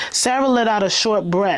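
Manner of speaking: usual speaking voice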